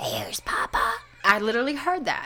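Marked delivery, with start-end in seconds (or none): 0.0-0.9 low, deep, growly whisper. Retelling a voice heard while up on the computer, in a deep growly voice. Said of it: "this deep, growly voice go".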